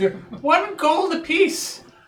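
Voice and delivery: very high, very slow, drawn-out vendor character voice. Voicing the pie seller offering a pie to a player: pie seller character voice. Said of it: "I'm selling pies".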